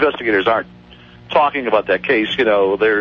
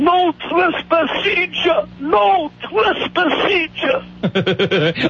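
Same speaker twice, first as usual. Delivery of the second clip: mock old man yell, much higher, slower. Recalling an old man from Italy yelling out in his yard, retelling his yell. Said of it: "he used to yell out".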